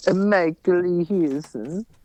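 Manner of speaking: put-on Italian accent. Saying own full name when asked: italian accent. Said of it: "Do it in an Italian accent".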